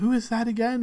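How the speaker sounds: said under one's breath. A narrator voices a noble woman who turns and asks, muttered under breath. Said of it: "But like under her breath".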